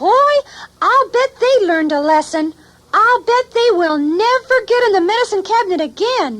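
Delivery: very high, tiny, squeaky little bookworm puppet voice. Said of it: "this is my friend, Squeegee, the bookworm".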